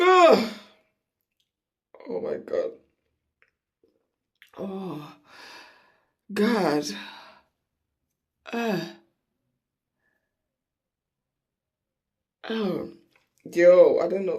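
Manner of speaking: crying, teary voice. Speaker tearing up while doing their nose, talking to viewers; crying, teary voice. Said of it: "I know I'm crying".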